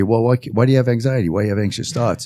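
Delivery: ordinary delivery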